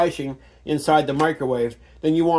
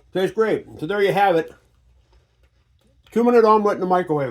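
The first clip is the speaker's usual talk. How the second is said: talking with mouth full, chewing, higher pitch; 5 semitones higher than usual. Channel host tastes the microwave omelet just made, talking with mouth full. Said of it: "sorry about all the chewing noise".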